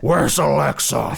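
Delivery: gruff, rough, loud, angry growl. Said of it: "he does sound like that sometimes".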